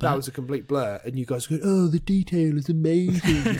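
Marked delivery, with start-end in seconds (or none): 1.6-3.6 bad, very drawn-out mocking imitation, loud and high. Mocking the others' praise of a game's visuals: terrible impression of friends. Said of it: "his terrible impression of us".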